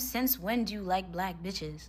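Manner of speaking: put-on whisper. Telling a story, quoting a woman whispering to her boyfriend, retelling a whisper. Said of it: "she kind of whispers to him".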